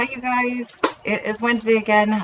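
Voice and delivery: winded, out of breath. Greeting the audience after rushing around, out of breath. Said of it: "I am feeling out of breath".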